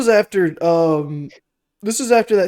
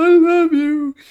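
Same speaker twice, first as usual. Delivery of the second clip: mock tearful, crying begging, higher and louder; 12 semitones higher, 5 dB louder than usual. Retelling a film scene where a mother begs for her life: imitating crying and pleading. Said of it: "crying and pleading".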